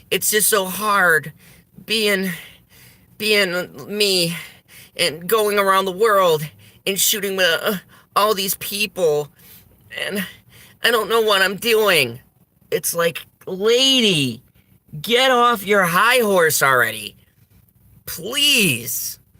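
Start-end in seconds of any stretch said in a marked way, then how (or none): 0.1-12.2 mocking, put-on ditzy, clueless airhead voice. Mocking a woman on a show by imitating how she talks. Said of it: "this is what she talks like".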